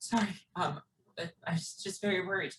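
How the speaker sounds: high, tearful crying speech. As the mother hugging her returning child, crying while speaking. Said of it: "and like is crying".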